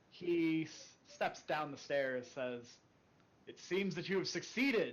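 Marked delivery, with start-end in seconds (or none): 3.4-4.9 resounding, room-filling booming voice, pitched high. A narrator voices a figure stepping down the stairs; booming voice. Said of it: "his voice booming through the halls".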